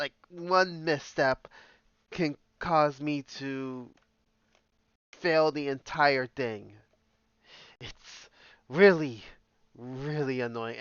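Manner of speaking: loud, slow, exasperated and fed-up frustrated speech. A gamer starting a session talks to viewers, frustrated. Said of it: "you can hear the frustration in my voice".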